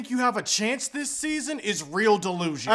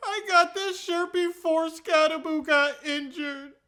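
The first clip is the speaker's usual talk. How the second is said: tearful crying voice, pitched higher; 6 semitones higher than usual. At the NFC East meeting, talking about a player's injury, crying.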